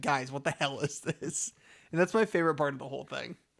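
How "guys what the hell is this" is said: exasperated, fed-up, over it. Retelling a cartoon scene where the princess is fed up: imitating exasperated Princess Bubblegum. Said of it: "not putting up with this shit".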